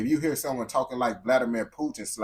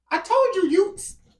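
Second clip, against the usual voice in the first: put-on British accent, very high and loud; 11 dB louder than usual. Describing getting walked down by a British person, imitating a British accent. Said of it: "You get walked down by a British person".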